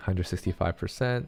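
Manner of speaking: normal talking voice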